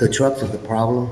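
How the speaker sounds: speaking too softly, soft and hard to hear.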